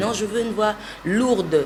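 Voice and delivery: normal talking voice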